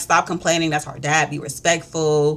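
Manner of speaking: usual speaking voice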